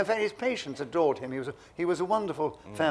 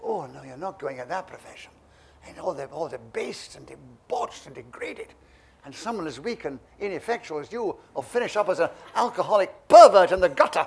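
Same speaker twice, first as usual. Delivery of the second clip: loud, strict, put-on Scottish accent; 7 dB louder than usual. Quoting a mother's objection to becoming a professional actor, in a put-on Scottish accent. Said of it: "she didn't have a Scottish accent".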